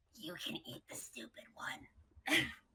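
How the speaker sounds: hushed, quiet, breathy whisper. Narrating the scene, the storyteller voices a character whispering to another character: quiet whisper. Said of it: "she whispers quietly to Mufa".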